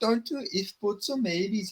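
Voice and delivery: put-on Scouse Liverpool accent, soft and high. Speaker tries out an accent mid-chat with another speaker, doing a put-on Scouse accent. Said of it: "try and do a Scouse accent".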